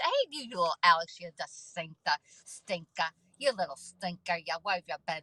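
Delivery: full, heavy put-on New Jersey accent. Speaker thanks a new follower, new jersey accent. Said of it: "That's that's my New Jersey accent".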